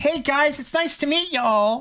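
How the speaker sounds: very high-pitched pop idol voice, put-on neutral American accent. She comes back on stream as a kawaii idol and greets everyone, in a put-on high-pitched neutral american accent. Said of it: "she sounds like neutral American accent, high pitch".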